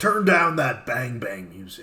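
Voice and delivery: scolding father voice. Asked to do it again, the speaker repeats the dad's line: imitating Dave's dad. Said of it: "Do it again".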